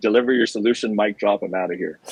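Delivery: plain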